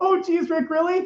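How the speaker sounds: very high-pitched cartoon kid voice, pushed to the top. Acting out a cartoon scene alone: Morty impression. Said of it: "I do like to do an okay impression of Morty".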